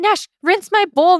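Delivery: put-on high, frantic, panicked, pleading kid voice.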